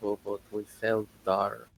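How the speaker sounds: whispering under the breath, acted. Voicing a character muttering under his breath: whispering under his breath. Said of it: "he just whispers".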